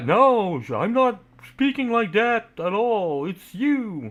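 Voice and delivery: angry, very high voice. Retelling a friend's reply after being told off: imitating someone getting mad. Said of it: "she got mad".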